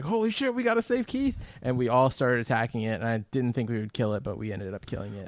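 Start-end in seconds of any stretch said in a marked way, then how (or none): 0.0-1.4 play-acted frantic, very high-pitched panicked outburst. Retelling how the others reacted to the shark: imitating others freaking out. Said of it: "you guys start freaking out".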